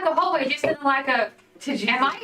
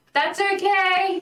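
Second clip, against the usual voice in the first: loud calling-out voice; 3 semitones higher than usual. Player's character standing outside the door, shouting in. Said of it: "and then I just shout".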